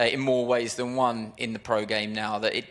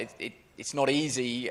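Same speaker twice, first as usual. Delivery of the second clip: normal talking voice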